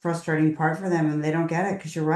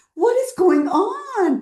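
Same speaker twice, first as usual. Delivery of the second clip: put-on baffled, complaining tone, higher and louder; 5 dB louder than usual. Retelling how a parent complained about an insurance bill: imitating a baffled parent's complaint. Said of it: "Then he said, like, multiple times".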